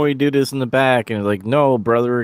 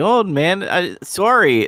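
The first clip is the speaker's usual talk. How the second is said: mock casual, nonchalant, high and drawn-out; 7 semitones higher than usual. Retelling a wrestling apology, imitating Luger acting nonchalant. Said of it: "him acting all, like, nonchalant".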